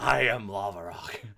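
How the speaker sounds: put-on very slow, forceful, aggressive delivery. Teasing a player by repeating their line: imitating an aggressive declaration. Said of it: "aggressively telling the audience who you are".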